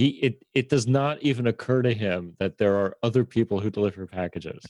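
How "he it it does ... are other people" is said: ordinary delivery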